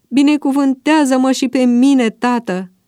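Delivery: pleading. Esau, who has lost the blessing, begs his father: pleading. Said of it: "s-a rugat el".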